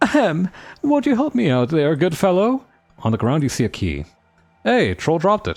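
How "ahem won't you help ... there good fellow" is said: high, genteel, affected fancy put-on voice. Voicing the figure heard inside a cage: put-on fancy voice. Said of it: "I'm gonna give him like a f fancy voice".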